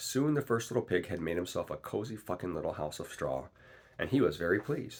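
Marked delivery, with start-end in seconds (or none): none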